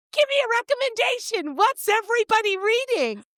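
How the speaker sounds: very high, excited, giddy shout. Recalling calling out to seven people in a small store, retelling a scream. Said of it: "I just scream out".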